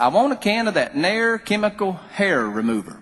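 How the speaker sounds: put-on strong rural country accent. Retelling a childhood pharmacy visit, the speaker quotes the woman in a country accent. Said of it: "she was real country".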